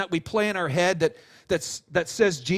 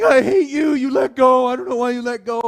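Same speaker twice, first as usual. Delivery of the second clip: mock very loud, sobbing child's yell; 5 semitones higher, 9 dB louder than usual. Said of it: "they're standing there crying".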